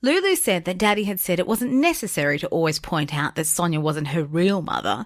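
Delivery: ordinary delivery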